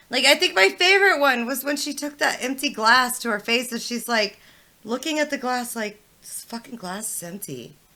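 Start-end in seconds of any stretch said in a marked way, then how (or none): 6.2-7.6 play-acted, very quiet, hushed, fed-up, irritated dismay. Recounting her favorite moment, a woman looking at her glass: imitating her pissed-off dismay. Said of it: "She's like pissed as fuck".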